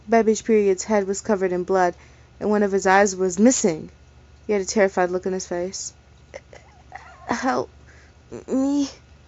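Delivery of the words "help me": high, raspy, begging voice. A bloodied man begs the narrator holding him for help: raspy begging voice. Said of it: "he begged in a raspy voice".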